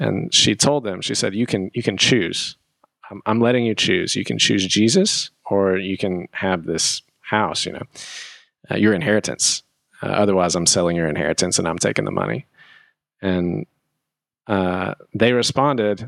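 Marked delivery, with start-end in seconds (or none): none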